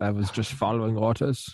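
put-on German accent. Joking about how the lady said it: German accent. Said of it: "Did she say it in a German accent too?".

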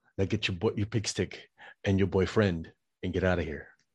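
failed, unconvincing put-on French accent. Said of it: "that's the best J C V D Arnold would do".

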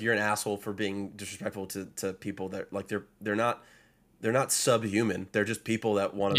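ordinary delivery

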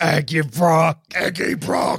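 put-on monster voice. Joking with others about a nickname, doing it in the Venom voice. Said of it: "Do it in the Venom voice".

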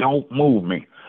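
mock begging, pleading voice. Retelling begging a coach not to change his position: imitating begging. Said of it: "I'm begging him".

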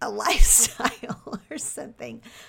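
words breaking into laughter. Describing a recent purchase, laughing while talking. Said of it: "I can't even say that without laughing".

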